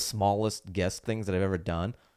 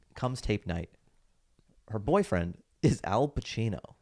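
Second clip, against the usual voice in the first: plain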